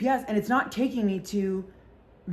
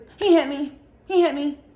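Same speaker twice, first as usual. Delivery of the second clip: put-on loud, high, babyish little-kid voice; 5 semitones higher, 6 dB louder than usual. Retelling finding a woman in an alleyway who kept repeating this: imitating her baby voice. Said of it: "she's talking like a baby".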